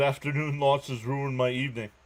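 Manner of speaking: ordinary talk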